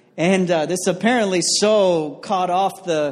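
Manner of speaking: plain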